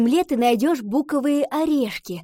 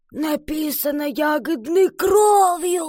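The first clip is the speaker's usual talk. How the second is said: eerie, creepy hoarse rasp, "кровью" stretched out; 4 semitones higher than usual. A girl draws a face in her forest diary with a berry-stained finger: raspy, creepy voice. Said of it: "прохрипела она жутким голосом".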